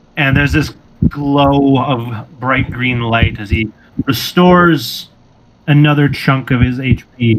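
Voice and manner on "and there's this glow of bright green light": ordinary delivery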